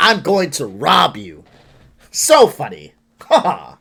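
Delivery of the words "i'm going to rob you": grave, serious, straight-faced tone. A speaker mocking a prank shows how he'd approach someone, in a serious tone. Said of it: "in a serious tone and go".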